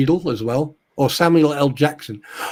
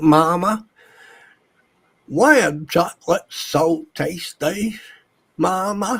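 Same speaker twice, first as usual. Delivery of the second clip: very slow, high, attempted Southern US drawl; 5 semitones higher than usual. Speaker tries copying the other speaker's way of talking; attempting the other speaker's accent. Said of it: "get that accent right where you go".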